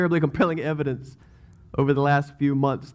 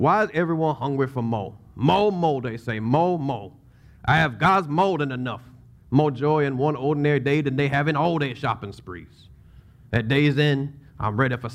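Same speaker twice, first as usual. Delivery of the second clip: put-on Cajun accent. Speaker tries a cajun accent a second time for listeners, cajun accent. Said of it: "a Cajun accent".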